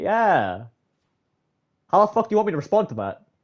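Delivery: uncomfortable tone, drawn-out yeah. Showing how they respond when someone says something hurtful, acting out saying it awkwardly. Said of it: "I say it in more of a way where it's kind of awkward".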